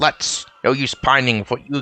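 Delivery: plain reading voice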